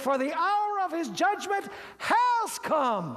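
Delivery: high, slow, proclaiming shout, like an angel.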